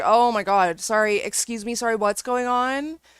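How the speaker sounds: put-on annoyed tone. Describing a woman's 911 call while her mother prods her: imitating annoyed voice. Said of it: "Can you hear how annoyed she sounds?".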